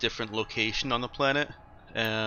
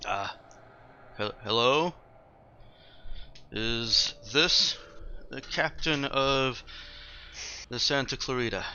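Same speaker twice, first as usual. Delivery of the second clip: trembling, stammering, shaky nervous voice. Voicing a caller over the speaker asking for the captain, in a shaky voice. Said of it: "shaky voice comes up".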